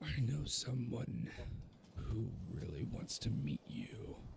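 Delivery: whispered, hushed, throaty and guttural monster voice. Game master voices a caged beast speaking to a player's character, guttural beast voice. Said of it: "in this very gutturally uh, beast voice".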